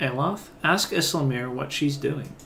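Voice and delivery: ordinary talk, nothing marked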